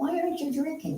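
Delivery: high, wide-ranging pitch, pushy insistent tone.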